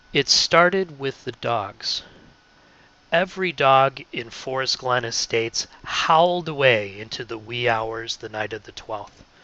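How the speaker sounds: measured, unhurried, slow, deliberate storytelling read. Showing how to read a story passage aloud: slow, deliberate reading. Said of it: "I would read it more like this".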